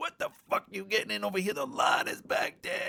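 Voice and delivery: mock angry, high outburst with a rasping edge. Retelling how an old man in a pickup yelled at a drive-through, retelling an angry yell. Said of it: "And he's getting all pissed".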